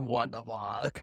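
low, slow, soft, stunned mutter. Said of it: "He's like".

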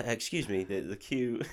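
put-on soft murmur, overly polite British accent. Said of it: "I'd go full British".

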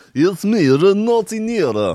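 high put-on Russian or Eastern European accent. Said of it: "Eastern Eu-, European or Russian accent".

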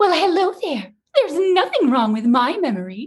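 put-on very high, fairy-tale princess voice. Trying out a voice for a character, going for a full Disney princess voice. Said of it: "You could go full Disney princess".

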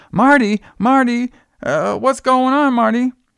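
very high, frantic calling out. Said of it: "Jenny's like".

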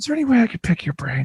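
mock sweet, soft, courteous little voice. Speaker imitates people asking to pick their brain: imitating a nice tone. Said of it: "in a nice tone like that".

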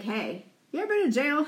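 light, joking, flippant tone. Showing how they would ask a question: flippant, funny way. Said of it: "flippant, like, funny kind of way".

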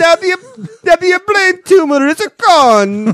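imitated Italian accent. Imitating a family claiming a miracle: imitating Italian family. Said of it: "The family's Italian".

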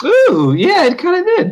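high-pitched voice. Replying to another speaker, in a high-pitched voice. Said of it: "said that in such a high pitched voice".

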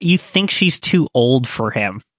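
normal talking voice

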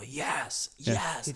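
play-acted, high, thrilled, overjoyed cry of triumph. Retelling own celebration caught on video: imitating own screaming. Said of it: "I'm literally screaming".

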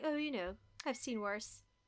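self-satisfied, really smug delivery. Retelling what a character said while watching boxing: imitating a smug remark. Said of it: "she says in this really smug way".

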